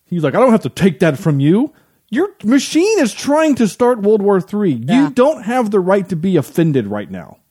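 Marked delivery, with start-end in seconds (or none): 0.3-1.7 put-on defensive comeback tone. Retelling a man's reply after being told his park won't be endorsed, imitating someone getting defensive. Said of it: "he gets all defensive".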